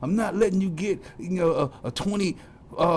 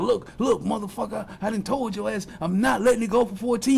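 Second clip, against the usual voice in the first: play-acted heated, furious, threatening rant; 4 semitones higher than usual. The speaker acts out his homeboy arguing over a price with a man, retelling angry screaming. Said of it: "He's just screaming at him".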